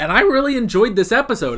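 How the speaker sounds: high voice cracking and breaking mid-phrase. Saying how much an episode was enjoyed, voice cracking. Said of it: "as my voice cracks".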